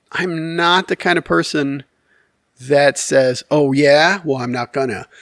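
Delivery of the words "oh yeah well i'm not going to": usual speaking voice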